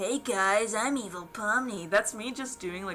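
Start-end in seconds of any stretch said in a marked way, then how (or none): 0.0-1.9 goofy, stupid-sounding, very slow, dragged-out put-on voice. Trying out an Evil Pomni voice: stupid Evil Pomni voice. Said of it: "just doing, like, a stupid ass voice".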